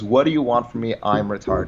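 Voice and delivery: plain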